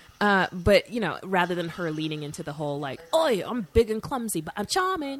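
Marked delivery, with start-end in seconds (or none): 3.2-5.2 put-on Australian accent, much higher. Describing how she could come across, in an Australian accent. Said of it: "That's my Australian accent".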